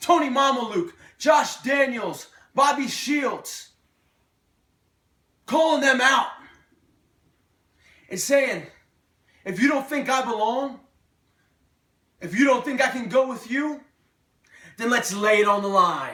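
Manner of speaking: heated, worked-up, angry, agitated. Recounting calling out several named people to prove themselves: angry. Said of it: "I know I sound angry".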